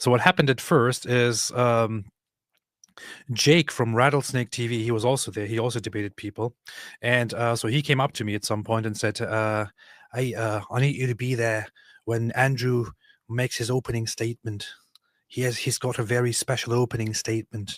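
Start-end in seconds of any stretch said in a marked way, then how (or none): 10.1-17.8 failed, weak attempt at an Australian accent. Recounting a debate event, the speaker quotes Jake in a bad Australian accent. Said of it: "I really can't do an Australian accent".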